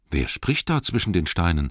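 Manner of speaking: plain reading voice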